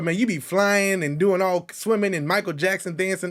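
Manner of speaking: usual speaking voice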